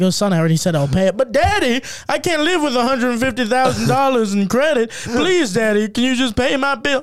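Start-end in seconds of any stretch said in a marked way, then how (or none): 1.2-7.0 mock pleading, much higher, louder. Acting out begging a father to pay a bill, in mock pleading. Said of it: "Why are you making fun of me?".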